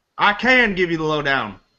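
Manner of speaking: put-on southern US accent. Answering a request for the lowdown on a game: southern accent. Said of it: "what's with the Southern accent?".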